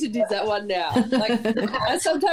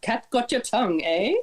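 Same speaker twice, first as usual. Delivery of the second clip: usual speaking voice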